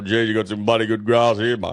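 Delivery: put-on old cocky farmer voice. Telling a friend what an old cocky would say walking through, in old cocky voice. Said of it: "an old cocky would have walked through that and go".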